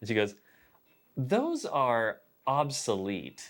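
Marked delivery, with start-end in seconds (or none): 1.2-3.5 play-acted crisp, swooping, syllable-by-syllable, over-enunciated brush-off. Retelling a girl in a store answering, imitating dismissive over-enunciation. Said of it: "she enunciated it as if to, like, really disregard".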